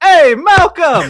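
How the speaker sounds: very loud, high-pitched shout. Voicing a character who remembers a name: character shouting a greeting. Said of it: "just shouts".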